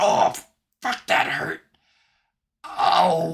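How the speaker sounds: high, rough, creaky, pained little goblin voice. Narrating a game scene where a little goblin falls and hits the ground, goblin voice in pain. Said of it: "this little goblin falls out of it, hits the ground, and goes".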